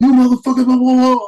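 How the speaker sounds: loud, high-pitched coach-style yelling.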